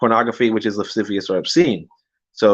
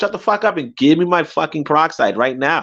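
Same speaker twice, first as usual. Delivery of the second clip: mock angry, pissed-off, impatient tone; 6 semitones higher than usual. Recounting what she said to the pharmacist, retelling an angry demand. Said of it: "I was just fucking pissed".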